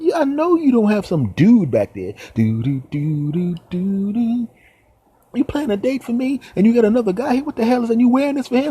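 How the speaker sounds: high, loud, indignant and outraged ranting voice.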